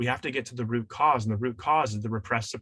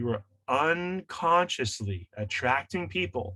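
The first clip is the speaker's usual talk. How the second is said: very slow, deliberate, each word spaced out; 3 semitones higher than usual. A speaker explaining to listeners announces a key point, said very slowly. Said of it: "let me say this very slowly".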